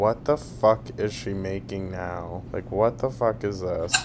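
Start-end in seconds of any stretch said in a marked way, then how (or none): none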